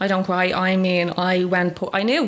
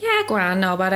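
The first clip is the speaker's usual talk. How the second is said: ordinary talk, nothing marked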